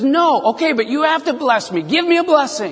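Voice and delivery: play-acted, high, worked-up, upset outburst. Retelling Esau demanding a blessing from his father; acting out Esau flipping out. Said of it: "Esau flipped out".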